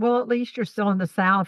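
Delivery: ordinary delivery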